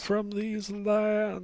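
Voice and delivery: very high, raspy, rasping ghost voice. A game master voices a ghost warning the players, in a rasping voice. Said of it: "hears the rasping voice saying".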